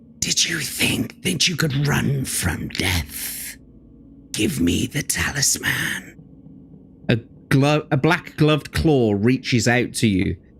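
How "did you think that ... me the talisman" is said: soft, hissed, sibilant whisper. A game master voices an apparition confronting the player: hissing sibilant whisper. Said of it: "it hisses a sibilant whisper".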